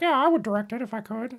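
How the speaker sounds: very high, hushed, soft character voice. Imagining what George said about directing the movie: George Lucas impression. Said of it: "that's my George Lucas impression".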